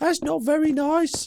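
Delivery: silly squeaky put-on voice.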